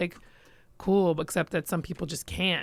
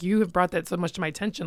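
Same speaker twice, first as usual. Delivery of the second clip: plain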